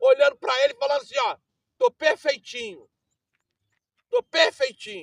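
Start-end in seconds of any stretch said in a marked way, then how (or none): 1.8-5.0 brazen, shameless, barefaced innocent-sounding tone. Acting out people who brazenly tell God they are perfect: imitating a shameless claim. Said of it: "na cara do, de pau".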